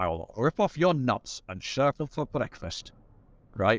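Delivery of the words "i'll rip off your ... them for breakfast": menacing, threatening movie-hero delivery. Retelling a threat from the film The Presidio: Sean Connery type voice. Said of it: "in a Sean Connery type voice".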